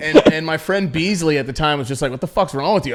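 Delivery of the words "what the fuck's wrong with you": normal talking voice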